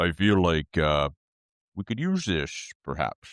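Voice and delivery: put-on deep character voice. Speaking in character about what they could use: put-on deep character voice. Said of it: "let me say this in character. I feel get my deep voice on".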